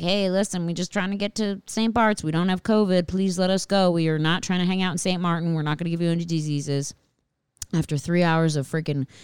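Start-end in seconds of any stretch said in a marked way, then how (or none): none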